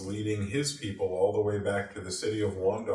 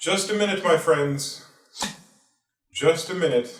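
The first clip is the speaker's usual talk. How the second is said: regal, stately voice, raised and high; 8 semitones higher, 7 dB louder than usual. Storyteller voicing someone calling from the darkness above a surrounding horde; regal voice. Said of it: "a very regal uh, sounding voice".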